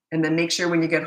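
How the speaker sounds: usual speaking voice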